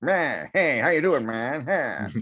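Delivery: put-on old-timey announcer patter. Retelling a comedian's bit about how people used to talk: old-timey announcer voice. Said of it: "They used to talk like this".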